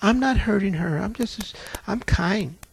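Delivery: slow, sugary, meek, demure put-on voice. Retelling a demon giving its name: imitating a sweet, demure voice. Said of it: "She sounded just as sweet and demure".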